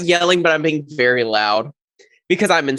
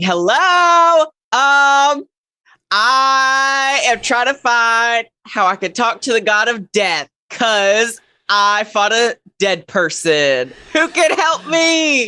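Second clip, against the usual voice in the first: slow, unhurried, pitched-up shouting; 7 semitones higher, 3 dB louder than usual. Player voicing their character who bursts in asking for help: yelling. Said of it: "I'm yelling".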